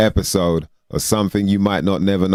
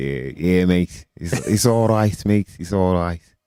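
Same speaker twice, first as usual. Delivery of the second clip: sixties-style Liverpool accent. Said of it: "went a little bit Beatlesy".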